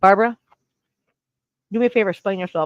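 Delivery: talking while chewing, mouth full of ice. Speaking into a microphone to Barbara, chewing ice. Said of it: "Can you hear me chewing on my ice?".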